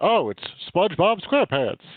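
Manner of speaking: announcer-style voice, declaring and proclaiming. Retelling a cartoon scene where the announcer fish reads the winner: imitating the announcer fish. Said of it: "he puts on reading glasses, like".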